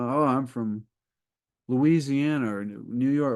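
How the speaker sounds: ordinary delivery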